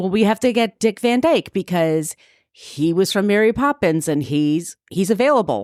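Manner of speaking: ordinary delivery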